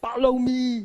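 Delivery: loud, forceful put-on Austrian accent. Quoting what the speaker's husband says at the grocery store, in an Austrian accent. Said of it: "that Austrian accent".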